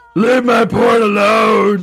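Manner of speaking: put-on monster voice. Joking about why the killer murders everyone, Victor Crowley voice. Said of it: "That's my Victor Crowley voice".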